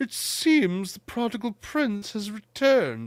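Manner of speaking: hushed, swooping theatrical villain voice. Discussing a trailer, the speaker quotes the villain's line: Shakespearean Skeletor voice. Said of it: "you're going like Shakespearean with this Skeletor".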